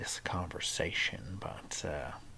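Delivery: soft, hushed, unvoiced whisper.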